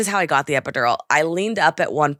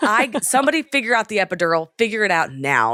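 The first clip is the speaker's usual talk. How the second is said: mock scream, high-pitched and mild; 5 semitones higher than usual. Retelling a painful labor, imitating her own screaming. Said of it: "I'm just, like, screaming".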